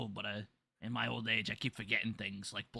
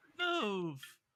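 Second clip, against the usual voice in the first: shrill, high, piercing scream; 11 semitones higher than usual. Making an out-of-game joke: a voice screams. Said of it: "a voice screams".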